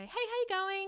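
very high, perky little service-staff voice. Greeting people nearby back in Blacktown, in a put-on perky Club Med voice. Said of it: "with my perky little Club Med voice".

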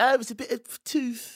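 slow, high mock posh English accent.

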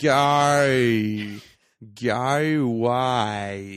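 very loud Australian accent, vowels stretched, "why" drawn out. Showing how to do an Australian accent: Australian accent vowels. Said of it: "add every vowel sound into every word".

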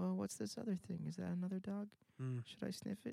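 soft, creaky, unsure, hesitant wondering. Speaker imagines how the dog would talk if it were unsure, hesitant dog voice. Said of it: "if he was hesitant".

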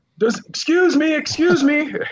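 mock shrill, very high, drawn-out yell. Retelling calling out in the chaos at a town hall: retelling own yell. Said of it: "And I yelled out".

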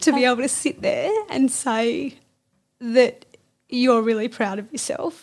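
voice catching, choking up on held-back tears. Speaking directly to the other person, about to cry. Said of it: "I'm going to cry again".

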